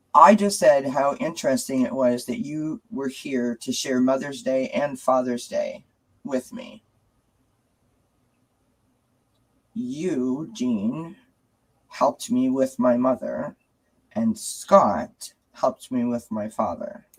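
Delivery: choking up, close to tears, lingering on you. Speaking to two guests after apologizing in advance: close to tears. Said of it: "I hope that I can say this without crying".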